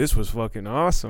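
ordinary delivery

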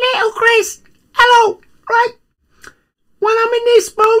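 very high, loud little tiny-creature voice. Going back to his little self, the speaker talks in a tiny person voice. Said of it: "I got to talk in this voice because I'm very tiny".

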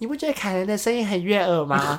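put-on small, tender, innocent-sounding childlike little voice. Retelling what the speaker said to an older brother as a schoolchild, in a childish voice. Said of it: "我用稚嫩的声音说".

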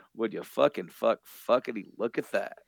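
amused, acted words broken by chuckles. Retelling a comic character's line about a barbed wire fence: imitating a chuckling character. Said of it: "he kinda chuckles to himself and says".

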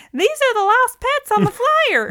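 very high, loud voice. Retelling a movie scene where the park ranger spots the dogs: imitating Kit McDonough's park ranger.

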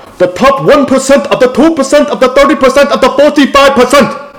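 shrill, high-pitched, loud yell. Show off your funny impression of a man always yelling about percentages, as a yelling Bernie impression. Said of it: "I'll do it right now".

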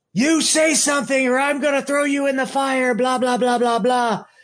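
high, mock, put-on yelling.

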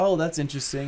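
ordinary talk

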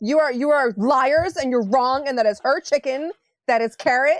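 loud, high-pitched sudden angry outburst. Voicing Amelia as she bursts out that the others are liars: bursting out angrily. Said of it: "And Amelia just bursts".

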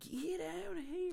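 very high, put-on cartoon villainess accent. Echoing the other speaker's impression line back, in a Harley Quinn accent. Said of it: "I like her new accent".

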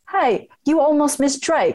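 bad put-on British accent. Retell what a band's drummer said to you in a field in england, in a terrible british accent. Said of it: "That was a terrible accent".

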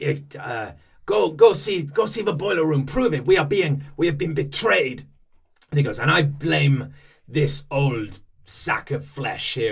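put-on over-the-top French accent. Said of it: "an outrageous, uh, French accent".

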